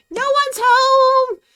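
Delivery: shrill, very loud, super high tiny squeaky voice. The narrator voices someone answering a knock from inside, super high-pitched voice. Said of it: "just a super high pitched voice".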